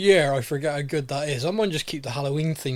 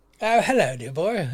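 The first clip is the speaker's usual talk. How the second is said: put-on, very, very posh costume voice. Greeting a co-host on a Halloween special: put-on posh voice. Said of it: "We're very, very posh".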